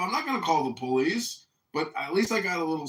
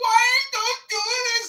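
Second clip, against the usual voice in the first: shrill, very high-pitched screaming; 6 dB louder than usual. Retelling a couple passing by, imitating the woman screaming. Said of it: "she was screaming".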